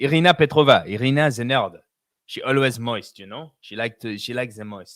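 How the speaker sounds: put-on French accent. On a podcast, saying someone's name with a French accent. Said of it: "Gotta say it with my French accent".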